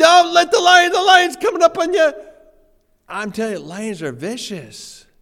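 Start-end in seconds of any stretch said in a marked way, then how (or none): 0.0-2.1 very high, very loud yelling. Retelling watching lion videos on YouTube: retelling own yelling. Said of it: "yelling at my phone".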